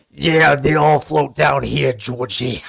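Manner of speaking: clown voice, rough like a lifelong heavy smoker. Talking about Tim Curry's performance, quoting his line in a Tim Curry chain-smoker clown voice. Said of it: "sounds like a guy in a Chuck E. Cheese suit that's been chain smoking".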